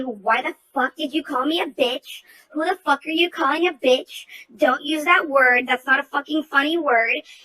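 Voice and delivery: acted, furious, angry shouting tirade. Retelling yelling at a man in front of everyone in the store, retelling own yelling. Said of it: "I start yelling at him".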